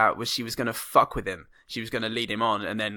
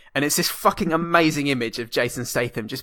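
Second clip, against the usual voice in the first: plain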